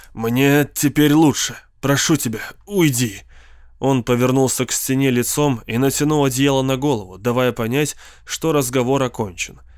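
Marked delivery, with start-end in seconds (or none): 0.2-3.2 spoken through gritted, clenched teeth. Narrator reads the words of a man lying in bed, through gritted teeth. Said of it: "сказал он все так же сквозь зубы".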